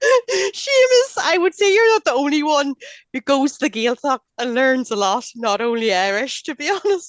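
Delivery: laughing through the words. Answering seamus's comment about the gaeltacht: giggling while talking. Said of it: "I had to get the giggles".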